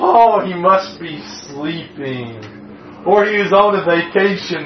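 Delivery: mocking put-on tone. Retelling what Elijah said about Baal: mocking as Elijah. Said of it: "Elijah mockingly says about him".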